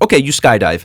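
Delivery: simple, non-fluent English. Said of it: "they were speaking broken English".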